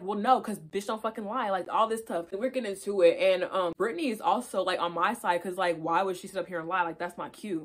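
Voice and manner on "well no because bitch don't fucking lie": mock-angry, heated arguing tone. Recounting an argument with a woman, retelling a heated argument. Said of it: "So we start arguing".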